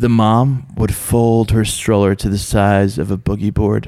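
put-on dramatic delivery. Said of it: "Are you gonna read it dramatic like that?".

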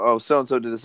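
usual speaking voice

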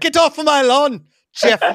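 very high, very loud, shrill, lordly English lord voice. Speaker joking about a NASCAR driver's name: English lord voice. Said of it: "he sounds like an English lord who's like".

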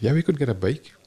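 secretive, plotting, conspiratorial tone. Speaker quotes their dad, imitating a conspiratorial tone. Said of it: "Very conspiratorially".

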